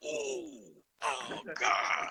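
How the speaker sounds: overacted, very high, creaky groans of pain. Retelling walking home after throwing his back out: imitating himself groaning in pain. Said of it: "every step was like".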